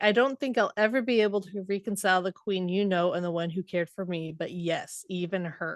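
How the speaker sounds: ordinary talk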